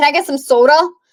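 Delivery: put-on New York accent. Retelling a mother asking for a drink: imitating a New York accent. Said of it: "she always adds that D in there".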